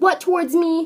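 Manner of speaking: very loud, high, rude tone. Retelling an accusation about what someone supposedly said: imitating a rude retort. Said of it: "in a very rude attitude".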